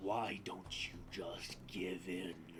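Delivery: slow, low, deep, menacing dragon voice.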